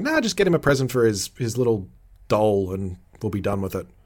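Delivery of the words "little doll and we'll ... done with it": ordinary talk, nothing marked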